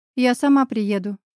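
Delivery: ordinary delivery, nothing marked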